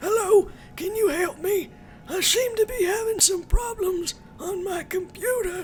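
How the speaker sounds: very high, weak, half-hearted put-on old-man voice. Speaker demonstrates a half-assed old man voice impression. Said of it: "I was trying to actually do my very half-assed old man voice, so let me demonstrate for you".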